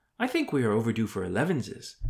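ordinary delivery

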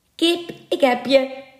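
high, taunting, jeering call full of scorn. One of the village men answers the merman with scorn, mocking call. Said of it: "riep de een".

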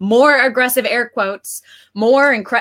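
plain

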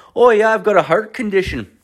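put-on very high voice with a loose Scottish accent. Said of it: "kind of a Scottish accent".

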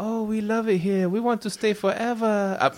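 very high-pitched fake put-on Korean accent. Quoting a text message someone sent, in a put-on korean accent. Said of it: "I didn't mean to do an accent".

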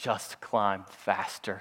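very calm, unbothered, very low and soft voice. Retelling how his brother answered him while climbing, imitating Stephen's calm voice. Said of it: "in the most calm voice he could ever".

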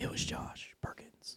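very soft sound effect whisper. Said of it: "sound effects".

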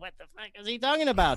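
high-pitched, fast, baffled outburst.

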